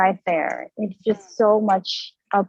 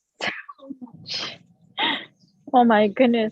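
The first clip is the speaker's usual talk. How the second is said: tearful, crying speech with swooping pitch; 4 semitones higher than usual. Guest thanks the host after sharing, crying while talking. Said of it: "I'm just crying on the street".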